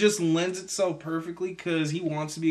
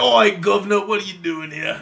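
very loud, put-on Cockney hooligan voice; 2 semitones higher, 8 dB louder than usual. Joking about the newly cast Alfred, in a mock Cockney accent. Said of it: "He looks like a Cockney fucking soccer hooligan".

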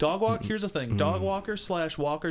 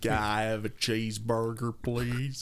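over-the-top, overblown put-on American accent; 6 semitones lower than usual. Joking about how people do american accents, ordering in an overblown american accent. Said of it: "overblown American accents".

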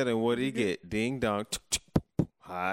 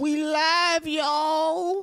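put-on loud, very high old-timer voice, "y'all" stretched; 6 dB louder than usual. Opening a podcast episode, greeting listeners in an old person voice. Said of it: "I'm not sure what that voice was about".

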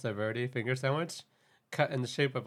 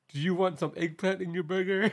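pitched-up put-on American accent; 6 semitones higher than usual. Retelling a contestant's joke line, imitating a put-on American accent. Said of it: "she makes an American accent and says".

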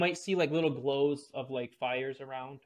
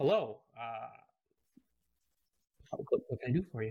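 put-on gentle, soft, deep, low voice; 2 semitones lower than usual. Retelling a man answering the door, imitating a gentle, deep voice. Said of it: "with a gentle but deep voice".

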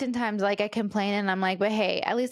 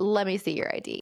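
mimicked voice full of attitude. Retelling how the store clerk asked for ID: imitating the clerk with an attitude. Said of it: "just the way she said".

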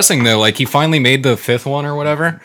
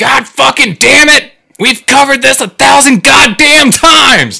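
imitated yelling, much higher, louder, slower; 13 semitones higher, 7 dB louder than usual. Describing a football coach scolding his player, imitating him yelling. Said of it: "He's yelling at".

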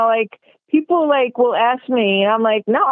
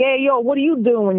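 put-on New York accent. Explaining that people say the speaker doesn't sound like a New Yorker, New York accent. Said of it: "I just don't have like".

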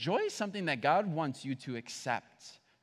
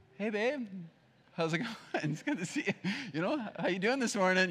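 fake cheerful, gentle, soft, sweet voice, pitched up; 5 semitones higher than usual. Acting out greeting a spouse while others watch: imitating a fake soft happy tone. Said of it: "it's soft".

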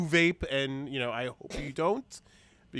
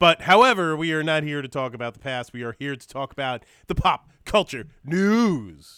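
very loud, booming game show host voice; 2 semitones higher, 9 dB louder than usual. The speaker moves the show on to pop culture news in a game show intro voice. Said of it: "That was like a game show intro".

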